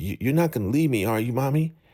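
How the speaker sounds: put-on high childlike voice of a ten-year-old boy. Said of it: "talking like he's ten years old".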